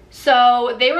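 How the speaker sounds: ordinary delivery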